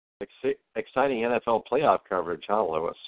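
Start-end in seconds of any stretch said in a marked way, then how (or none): none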